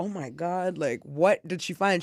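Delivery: mock alarmed, panicking voice. Retelling a call from mom about found drugs: imitating own panicked self. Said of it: "I'm panicking 'cause I'm like".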